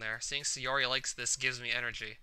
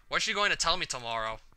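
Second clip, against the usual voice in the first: normal talking voice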